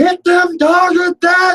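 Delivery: very high, drawn-out yell, acted out. Retelling a dog fight, imitating someone yelling. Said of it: "I'm yelling at 'em".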